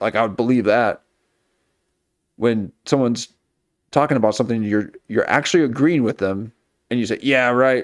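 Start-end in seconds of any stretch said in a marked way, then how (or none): 7.2-7.8 sarcastic, scoffing, disbelieving, mocking tone. Explaining how agreeing can sound like making fun, a sarcastic "yeah, right". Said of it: "it sounds like you're making fun of them".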